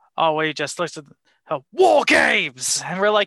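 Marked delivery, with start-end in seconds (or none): 1.7-2.8 grand, loud, pitched-up arena announcer call. Doing the yearly line on request: William Regal impression. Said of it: "I know you love the impression".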